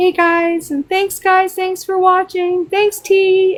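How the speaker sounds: very high, meek, sugary, sweet and timid voice. Imitating T Drop on her streams: imitating T Drop sweet and timid. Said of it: "she sounds so sweet and, like, timid".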